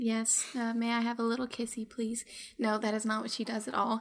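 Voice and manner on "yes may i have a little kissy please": sighing, quieter. A player speaks in character to the game's narrator, sighing.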